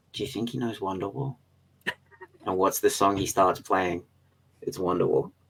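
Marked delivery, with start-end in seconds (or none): 0.1-1.3 hushed, very quiet half-whisper. Retelling asking a friend a question on the subway: retelling a half-whisper. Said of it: "I turn to her and I whisper".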